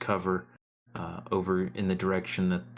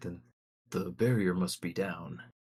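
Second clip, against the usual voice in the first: hushed, lowered voice, said more quietly; 3 dB quieter than usual. A narrator voices a character who steps closer to speak; speaking more quietly. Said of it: "takes a step closer and says more quietly".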